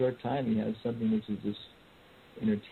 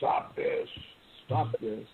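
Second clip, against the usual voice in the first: put-on fierce, menacing, ferocious voice, slow. Retelling how a man picked up a howling kid and told him off: retelling a ferocious command. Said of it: "said in this very ferocious voice".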